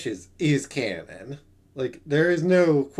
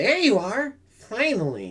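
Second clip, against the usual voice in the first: high, swooping character voice with swinging pitch; 6 semitones higher than usual. Reading game dialogue aloud, voicing a character: Maya voice. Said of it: "I'm using the Maya voice".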